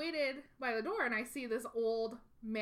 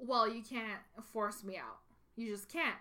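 put-on angry voice. Retelling how an angry guest refused to leave: imitating an angry guest. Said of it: "he gets really angry and he says".

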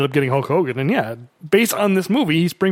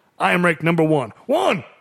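stiff, wooden, stilted line reading. Retelling a movie confrontation scene: imitating Mister T, said quickly. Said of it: "he says it so quickly".

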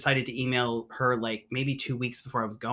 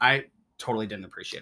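ordinary delivery

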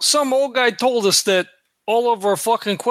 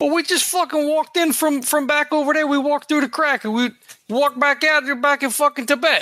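put-on streetwise American gangster accent, pitched higher; 6 semitones higher than usual. Speaking as a gangster character in the story, gangster accent. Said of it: "He's a gangster, so he's lost San already. Like, he's killed people and whatever. ... I'm picking up your accent, Vinny".

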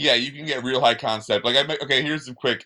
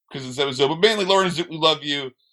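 plain

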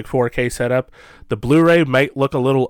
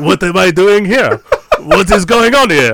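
terrible, basic put-on French accent, high and loud; 7 semitones higher, 7 dB louder than usual. Playing a really terrible AI guest on the show, in a terrible, basic French accent as Francois Truffaut. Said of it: "terrible, basic French accent".

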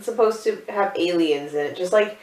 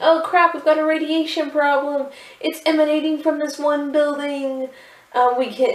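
put-on frantic, alarmed, panicked high screaming; 9 semitones higher than usual. Retelling a scene where a tech guy runs around: imitating someone screaming in panic.

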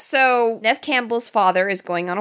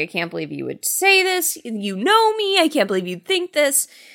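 put-on high, swooping, yelled protesting tone; 6 semitones higher than usual. Retelling a movie scene where he yells at her: imitating someone yelling. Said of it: "yelling at her".

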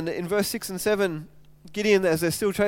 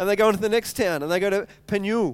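plain

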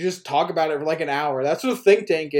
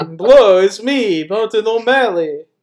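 put-on Irish vampire voice, higher and louder; 3 semitones higher, 5 dB louder than usual. Joking that a politician's name sounds like an Irish vampire: Irish vampire voice as Martin O'Malley. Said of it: "sounds like the name of an Irish vampire".

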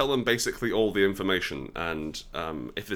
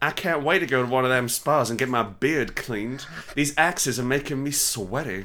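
saucy put-on Southern accent; 6 semitones higher, 4 dB louder than usual. Playing Gimli in a comedic bit, saucy southern Gimli. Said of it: "saucy southern Gimli".

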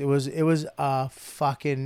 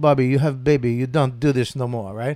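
bad, mock Polish accent. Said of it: "That's my worst Polish accent ever".

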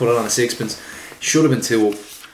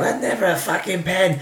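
high-pitched scream; 7 semitones higher than usual. Retelling someone watching a penalty replay in the pub: imitating Ray Wilson screaming. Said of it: "he's screaming at the telly".

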